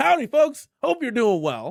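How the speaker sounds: shrill, blaring, very high, loud, belted out. Greeting the chat while impersonating a viewer: Billy Woods Mods impression. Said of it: "Let's see if I can, uh, impre-, impersonate him".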